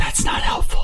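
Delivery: put-on whisper. Acting out a character muttering to ghosts: whispering as Loic. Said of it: "Just like Loic whispering".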